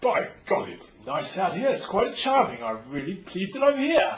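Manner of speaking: put-on British accent. Asked how they would say it, speaker answers in an english accent. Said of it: "how would they say that with an English accent?".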